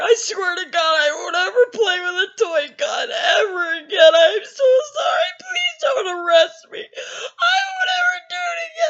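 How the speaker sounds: very high, bawling, sobbing voice. Retelling pleading with a cop while handcuffed: imitating own bawling plea. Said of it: "I'm bawling".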